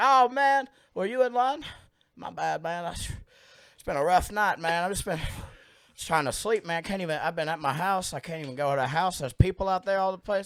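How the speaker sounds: high, loud, rambling, hard-to-follow talk. Retelling a man who cut in line ahead of him: imitating a stranger's voice. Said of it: "I'm gonna do the voice".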